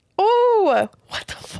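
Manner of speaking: tearing up, pitch rising. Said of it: "I'm crying".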